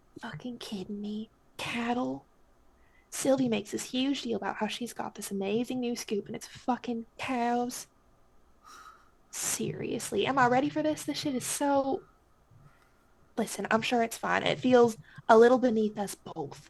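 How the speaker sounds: sneering very quiet whisper under the breath. A narrator voicing a character's reply once her companion is out of sight, in a sneering whisper. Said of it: "sneers a little bit and responds in a whisper".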